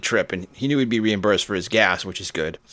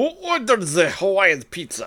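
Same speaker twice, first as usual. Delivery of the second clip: put-on Russian accent, very high and swooping; 11 semitones higher than usual. Repeating the other speaker's joke line about pizza: Russian accent. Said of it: "that's much better than I could do".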